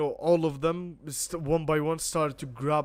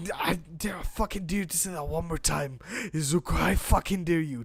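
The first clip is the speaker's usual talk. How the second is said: put-on angry, menacing tone. Telling a made-up story, voicing Bakugo angrily daring Izuku: voicing Bakugo angrily daring. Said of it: "gives him an angry look with his explosion".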